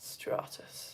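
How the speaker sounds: whispered, bored-to-death, utterly bored monotone. Demonstrating the word stratus while stroking a blanket, most bored voice possible. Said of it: "stratus in the most bored voice you possibly can, like".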